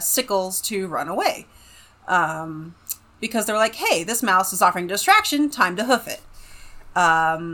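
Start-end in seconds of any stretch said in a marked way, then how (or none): none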